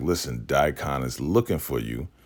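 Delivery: normal talking voice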